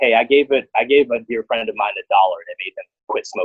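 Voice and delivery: normal talking voice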